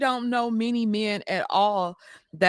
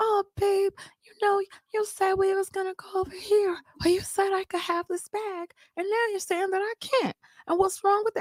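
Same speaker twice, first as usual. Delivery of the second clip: put-on babyish baby voice; 10 semitones higher, 3 dB quieter than usual. Imitating how women talk to their men, put-on baby voice. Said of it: "you know how women are used like the baby voice".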